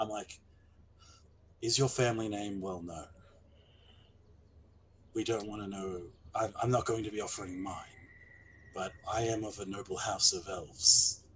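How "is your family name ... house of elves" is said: whispered aside in character. Leaning over to speak privately to Theodric in character: whispering in character. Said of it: "I'm actually going to lean over and whisper to Theodric".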